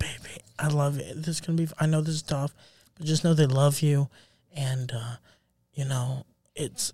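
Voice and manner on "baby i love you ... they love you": put-on soothing, comforting, consoling tone. Imagining a wife at a funeral comforting her husband: imitating a comforting wife. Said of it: "She's comforting you".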